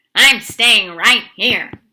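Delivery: very loud, grumbling rat voice. Reading a story, the rat answers the others' plan: grumbling. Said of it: "grumbled the rat".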